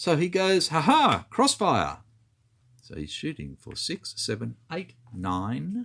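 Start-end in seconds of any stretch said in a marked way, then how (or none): 0.7-2.0 loud, put-on, silly German accent. Retelling what a man said during a game, in a silly German accent. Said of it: "silly German accent".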